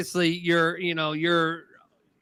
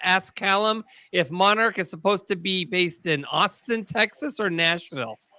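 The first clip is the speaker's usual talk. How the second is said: usual speaking voice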